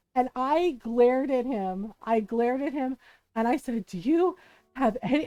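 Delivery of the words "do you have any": mock panting while speaking. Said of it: "and I'm panting".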